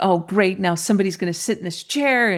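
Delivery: irritated, mad, grumbling under the breath. Retelling what a mad woman said on a flight to Toronto, imitating an angry grumble. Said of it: "She was grumbling and she was so mad".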